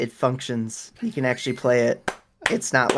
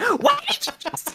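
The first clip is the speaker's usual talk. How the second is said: put-on angry voice, higher pitched. Retelling how mom reacted to a childhood remark: imitating mom getting mad. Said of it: "got so mad at me".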